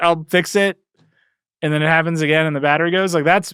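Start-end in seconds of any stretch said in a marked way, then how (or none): 0.0-0.8 put-on desperate, pleading tone. Imitating someone who bent their phone, hoping to fix it: imitating a desperate plea. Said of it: "a desperate sort of".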